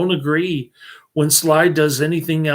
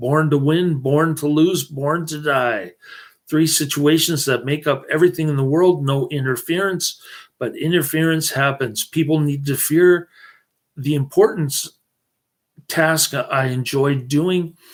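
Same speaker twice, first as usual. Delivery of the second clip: ordinary talk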